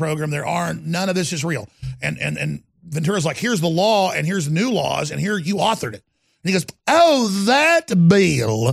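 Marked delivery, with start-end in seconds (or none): 6.9-8.7 put-on Southern accent. Retelling how Ventura answered about a bill: Ventura's fake Southern accent. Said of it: "in his fake Southern accent".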